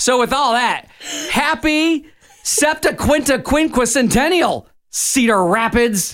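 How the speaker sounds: very high-pitched, scornful, disdainful delivery. After explaining why the town was incorporated, address cedar rapids with disdain. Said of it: "You said that with such disdain".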